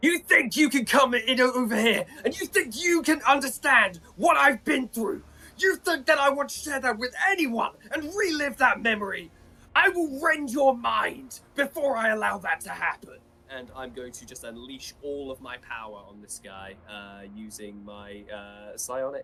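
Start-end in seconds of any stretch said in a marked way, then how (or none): 0.0-13.2 very high, furious, top-of-the-lungs shriek. Voicing a character attacking another with his mind: screaming at the top of lungs. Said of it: "just screaming at the top of his lungs".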